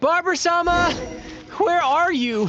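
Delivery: shouting loudly. Searching for someone who cannot be found, yelling and calling out. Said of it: "You're yelling even louder than me".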